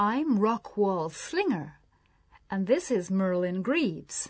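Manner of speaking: usual speaking voice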